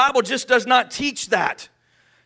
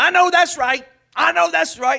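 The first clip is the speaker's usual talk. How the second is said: high, agreeing voice; 5 semitones higher than usual. Imitating people who watch a TV advice show, agreeing viewer. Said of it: "People watching Doctor Phil going".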